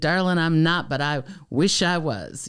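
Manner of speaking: heavy, thick, slow Southern Georgia drawl. Retelling a man's reply to her remark, in a thick Georgian accent. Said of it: "he had the thickest Georgian accent".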